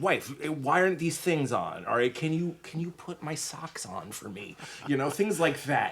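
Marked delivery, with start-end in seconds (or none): 0.0-4.6 mock testy, snippy, bossy, demanding tone. Explaining what he does before a stream, he acts out asking his wife: mock-snippy demanding tone. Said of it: "and I use that tone of voice".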